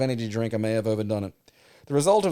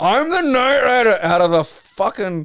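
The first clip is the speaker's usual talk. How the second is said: very high mock scream in Scottish accent; 9 semitones higher, 8 dB louder than usual. Describing the road demon showing up in a truck, mock-screaming in a scottish accent. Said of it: "like a Scottish accent screaming".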